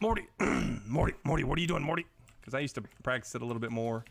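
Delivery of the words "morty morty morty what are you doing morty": put-on raspy, scratchy, loud cartoon voice. Asked to do voices, trying a character who keeps calling Morty: scratchy put-on voice. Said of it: "Voice gets a little scratchy".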